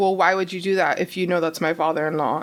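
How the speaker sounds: ordinary talk, nothing marked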